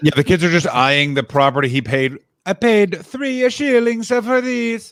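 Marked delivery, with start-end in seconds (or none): 2.4-4.9 put-on very high, slow, drawn-out Italian accent. Acting out the weird old man, the speaker puts on an italian accent. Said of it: "That's my spot on Italian accent".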